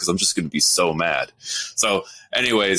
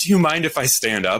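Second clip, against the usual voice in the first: mock courteous, polite, slightly high voice; 8 semitones higher than usual. Retelling a woman's daughter at a concert asking to stand, imitating a polite request. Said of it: "politely says".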